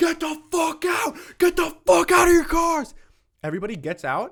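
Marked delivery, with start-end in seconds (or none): 0.0-2.9 very high-pitched, loud, shrill screaming. Retelling a dream where an armed man orders drivers out: imitating a man screaming. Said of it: "just starts screaming".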